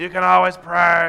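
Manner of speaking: depressed, glum, slow, gloomy, drawn-out delivery. Mocking how some people say a common line about prayer, in a mock-depressed voice. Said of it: "You have to have a depressed voice when you say that".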